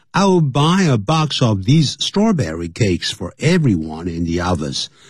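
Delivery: ordinary talk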